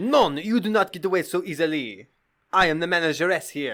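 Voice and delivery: put-on, menacing, sinister French woman accent. Speaker acting out a French woman proprietor, put-on sinister French woman voice. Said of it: "a sinister French woman who's the proprietor".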